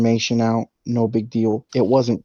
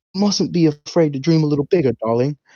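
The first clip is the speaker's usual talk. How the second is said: put-on British accent, pitched up higher; 5 semitones higher than usual. Recounting a favorite movie scene, quoting a character's line in Tom Hardy British accent. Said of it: "in his British accent".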